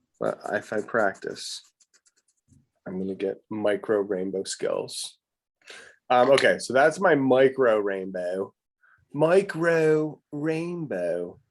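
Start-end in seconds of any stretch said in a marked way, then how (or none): 9.1-11.4 put-on, pitched-up Baltimore accent. Showing off her micro rainbow drawing, repeating its name in a Baltimore accent. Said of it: "That's with a Baltimore accent".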